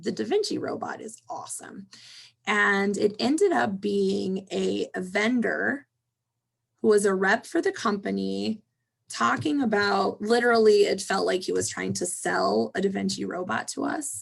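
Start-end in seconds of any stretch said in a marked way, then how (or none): 0.0-1.9 excited, thrilled, hushed whisper. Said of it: "we were all excited because we're like".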